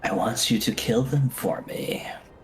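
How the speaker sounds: hushed whisper, whispering. Voicing a character's whispered request during a game, whispering. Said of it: "she whispers at".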